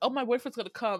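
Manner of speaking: ordinary talk, nothing marked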